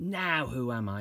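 eager, wondering, excited, high pitch and slow. Reading a story aloud, voicing a character's question, excited. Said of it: "He asked in excitement".

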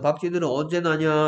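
ordinary talk

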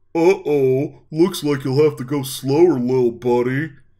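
very loud, high, teasing, mocking friend voice. Dave, alone in the darkness, speaking mockingly in his best friend's voice. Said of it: "he mocked in the voice of his best friend".

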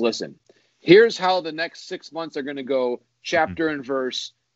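ordinary talk

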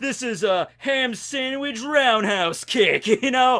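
put-on heavy dopey Brooklyn accent. Recalling the 4Kids dub of Sanji, mimicking him in a dopey Brooklyn accent. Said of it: "really dopey Brooklyn accent".

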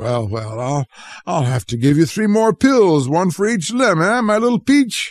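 spoken through a laugh, laughing. The doctor laughs while speaking to Charles, who sits up in bed. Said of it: "laughed the doctor".

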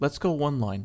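plain

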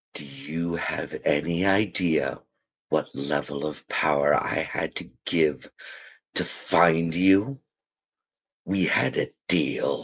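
deep, rumbling, resonating growling voice. Narrating a story, voice the mysterious presence speaking to the listener: deep resonating growling voice. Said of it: "a deep, resonating, growling voice speaks to you".

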